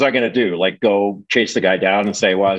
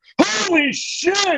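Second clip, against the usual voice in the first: mock screaming, pitched right up, very high. Retelling how Raft opened the check and looked at it, imitating someone screaming out. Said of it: "screams out".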